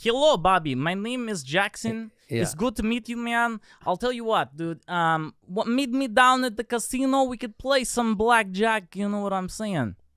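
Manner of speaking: high-pitched put-on East European accent. Improvising a character greeting Bobby, use an Eastern European accent. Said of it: "An East European".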